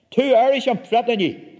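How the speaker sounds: high, yelled voice. The narrator's uncle, asked by an officer if he is threatening him, shouting. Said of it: "my Uncle Alec shouted".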